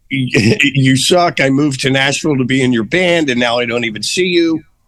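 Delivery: plain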